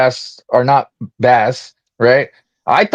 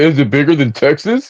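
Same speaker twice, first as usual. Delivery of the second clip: sarcasm-laced asking tone. Imitating another speaker's question: mock sarcastic question. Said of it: "Why do you have to say".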